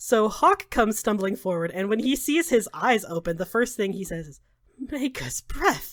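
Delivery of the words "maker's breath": hushed, aghast, appalled, horrified exclamation. Narrating the scene, the speaker voices a character's first words on seeing him alive: horrified. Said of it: "he is also pretty horrified by what he's seeing".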